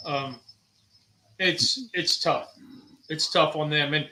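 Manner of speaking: emotional, choked up, voice catching, fighting back feeling. Speaking about how tough it is on caregivers: getting choked up. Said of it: "I'm getting choked up".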